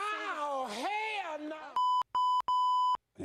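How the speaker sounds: very high voice swooping high and wide. Speaker retells how someone cursed in the car, doing a Steve Harvey impression. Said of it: "in his Steve Harvey voice".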